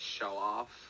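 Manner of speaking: barely audible, very quiet under-breath mumble. As another character looks at them during the game, mumbled under breath. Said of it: "I just mumble under my breath".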